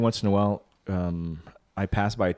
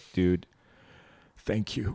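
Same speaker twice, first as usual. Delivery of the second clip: put-on choked-up voice. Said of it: "he was all choked up".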